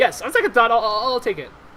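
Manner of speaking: high, loud, flustered delivery.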